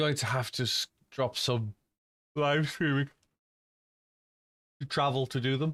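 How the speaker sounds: speaking through a yawn. Speaker tells viewers about upcoming plans, yawning while talking. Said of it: "Sorry, I'm yawning".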